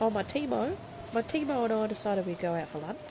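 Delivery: poor, bad, fake Australian accent. Joking about how an Australian would say a word: bad Australian accent. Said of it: "That's not a very good accent".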